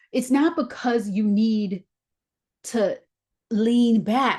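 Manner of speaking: choked-up, tearful voice breaking mid-phrase. Addressing the room after admitting to tearing up too, tearing up. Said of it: "I'm tearing up too".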